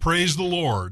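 small, mild called-out voice. Telling a story about a little old lady on her front porch: retelling a shout.

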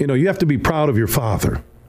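plain

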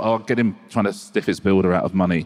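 normal talking voice

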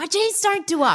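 squealing, very high, overjoyed yell. Speaker recreating what they shouted at a friend, retelling a happy yell. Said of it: "And I'm yelling at my friend".

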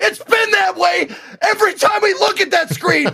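loud yell. Retelling a stream where chat argued back, imitating own past yelling. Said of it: "I was just yelling at him like".

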